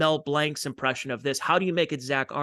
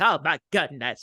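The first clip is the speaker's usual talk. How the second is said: mock, quivering, seventies-style voice; 3 dB louder than usual. Imitating the seventies comedians' quivering voice. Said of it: "quivering voice".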